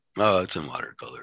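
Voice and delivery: disappointed, unimpressed, unproud tone. Imitating how the other speaker mentioned the tattoo: imitating an unproud, disappointed tone. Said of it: "You say that like you didn't".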